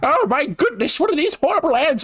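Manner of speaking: put-on squeaky, very high old lady voice. Acting out an imagined scene of Pikmin swarming: old lady character voice. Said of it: "like an old, like, lady character".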